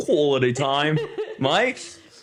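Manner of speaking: put-on Australian accent, stress leaning on mate. Teasing the other speaker for sounding australian, imitating an australian accent. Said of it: "you sounded like an like an Australian".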